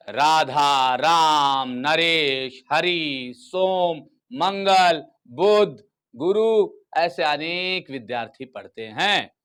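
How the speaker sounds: very slow list, pause after each name. Teaching comma pauses with a list of student names: short pause after each name. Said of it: "सभी के नाम बोलने के बाद मैं कुछ पल के लिए रुका।".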